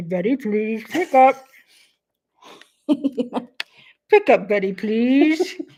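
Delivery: diner intercom PA page delivery. Recalling a Laverne and Shirley diner episode, the speaker does Laverne's intercom page. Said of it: "Laverne had like a microphone. She would say".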